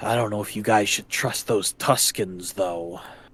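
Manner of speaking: voice dropped low. A storyteller voices a character who nods, addressing the group: lowered voice. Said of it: "kind of lowers his voice".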